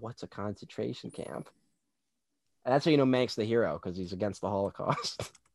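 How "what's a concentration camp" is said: very soft, breathy whisper. Retelling a film scene where a character whispers to his buddy: imitating a whisper. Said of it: "he has to turn to his buddy and go".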